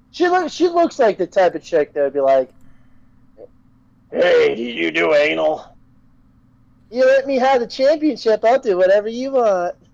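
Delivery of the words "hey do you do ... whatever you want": brazen, flirty, tossed-off delivery. Imitating a wrestler asking about the championship: Carmella impersonation. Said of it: "that's not a bad Carmella impersonation".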